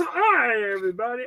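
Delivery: goofy cartoon doctor character voice. Recounting a scene from a cartoon, doing the doctor's greeting: Dr. Nick voice. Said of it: "And he goes".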